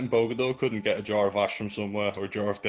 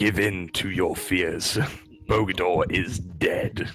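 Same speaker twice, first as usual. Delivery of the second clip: deep, heavy, very slow, deliberate, drawn-out delivery; 5 semitones lower than usual. Taunting another player to give in: sounding like the Emperor. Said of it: "You sound like the Emperor".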